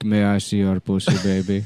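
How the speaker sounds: put-on Indian accent, laid on, reporter voice. Describing a Fox News video clip, imitating an Indian reporter. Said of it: "Fox News gets, like, an Indian reporter. And he's like".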